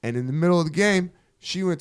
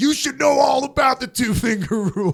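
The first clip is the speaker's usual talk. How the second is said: high, loud scream at the top of the lungs; 12 semitones higher, 5 dB louder than usual. Retelling a beer pong taunt yelled at the workplace: retelling own scream. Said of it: "I'm screaming, dude, at the top of".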